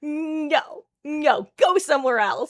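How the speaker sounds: forceful, aggressive, very slow, drawn-out "no". Asking another player about a match, the speaker acts out the voice heard: retelling an aggressive no. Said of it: "I the aggressive no".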